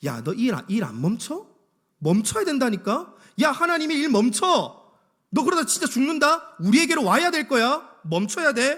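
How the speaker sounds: high, loud, menacing voice. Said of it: "이런 식으로 막 협박하는 거예요".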